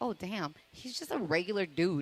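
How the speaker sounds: usual speaking voice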